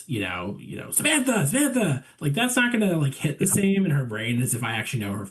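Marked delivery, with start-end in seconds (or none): 0.9-2.0 very high-pitched yelling dad voice. Speaker tries to get the attention of someone nodding out, yelling in a dad voice. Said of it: "I'm yelling in my dad voice".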